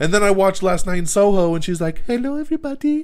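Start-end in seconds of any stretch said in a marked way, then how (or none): 2.0-3.0 put-on very high, whiny, babyish little-girl voice. Mocking an actress's real voice as heard in a film, whiny little girl voice. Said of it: "I got my little whiny girl voice".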